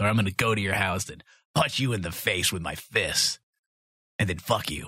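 put-on, mock, overly masculine macho voice. Host ending the show with a plug for pledges, in an overly masculine voice. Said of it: "because I'm overly masculine".

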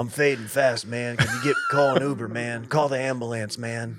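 put-on elderly man voice. Doing a Joe Biden voice trying his first nicotine pouch: Joe Biden voice. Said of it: "I've kinda got Biden voice".

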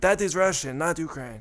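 put-on Russian accent. Retelling teasing a friend in pretend Russian: put-on Russian accent. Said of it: "in pretend Russian".

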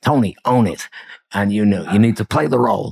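put-on Italian-American New Jersey accent. Retelling what a senior technology manager said to him: New Jersey Italian accent. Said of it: "The accent was brilliant".

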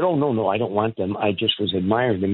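normal talking voice

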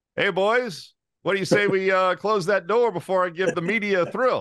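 mock rough, gruff, barked delivery. Retelling how a player barked out at teammates: barking out an order. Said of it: "hear him kind of bark out".

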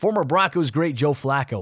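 ordinary delivery

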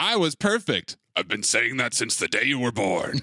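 very low, deep, dropped leading-man voice. Acting out a scene in a bit: Liam Neeson voice. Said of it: "Pretty locked in on the Liam Neeson voice".

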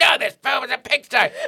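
very high, creaky, mean, strict little voice. Alice is asked to watch a movie; Edna replies in a strict, mean voice. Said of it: "real strict, mean little woman in your hand and you're like".

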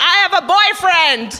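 slow, high, drawn-out yell. Backing away from a man offering to take her home, retelling a yell. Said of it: "I'm yelling at him".

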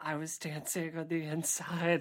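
eerie, creepy voice with murderous undertone. Imitating another speaker's line, which sounds creepier: imitating a creepy line. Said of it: "It sounds so much creepier when you say that".

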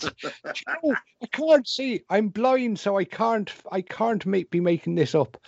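put-on drawn-out Northern Irish accent. Retelling what a blind medium from Northern Ireland said: imitating a Northern Irish accent. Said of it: "she talked like that".

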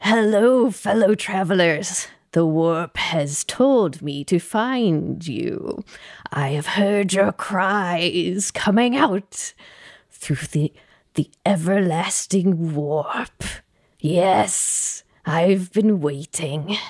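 put-on slow, heavy old man voice. Storyteller voices a new character meeting the travelers in the dark, slow heavy old man voice. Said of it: "slow, heavy old man style".

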